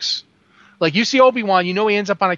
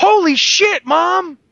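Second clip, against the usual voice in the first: mock very high, loud child's shriek; 11 semitones higher, 5 dB louder than usual. Retelling how a twelve-year-old in the theater reacted: imitating a kid screaming. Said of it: "this kid gets up and screams".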